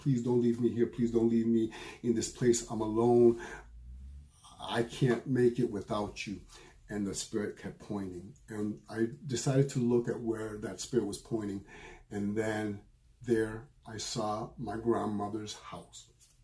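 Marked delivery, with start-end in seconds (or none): 0.0-6.4 mock frantic, hysterical pleading tone. Retelling a dream, pleading again with the spirit: imitating own hysterical pleading. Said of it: "I was hysterical".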